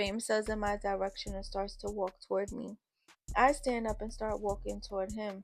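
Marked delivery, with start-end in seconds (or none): none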